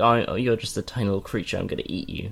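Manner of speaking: ordinary delivery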